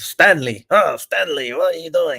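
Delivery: put-on villainous German accent. Act out the actor speaking to a character named Stanley, in a Jon Voight Nazi voice. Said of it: "in a Nazi voice saying".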